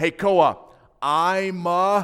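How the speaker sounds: shouting. Retelling calling a son in the other room: retelling own yell. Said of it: "And I yelled".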